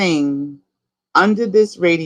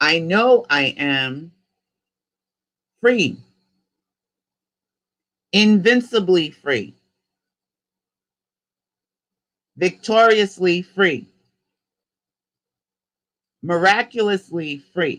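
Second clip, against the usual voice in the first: slightly slowed-down pace. Leading listeners in a repeat-after-me affirmation, speaking a little slower. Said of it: "I'm going to go a little bit slower".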